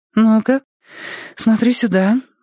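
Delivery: gentle, affectionate, tender, very high-pitched voice. The doctor speaks to the patient during an examination, tender. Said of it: "ласково говорит она".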